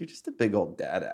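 mock-sweet condescending tone. A dad quotes how his five-year-old calls him, imitating sweet condescension. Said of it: "In like the sweetest. Condescending way of all time".

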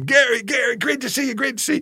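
very high, loud, hollered yelling. Retelling how Tom Cruise greeted him in a hallway: imitating Tom Cruise yelling. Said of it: "he's yelling my name".

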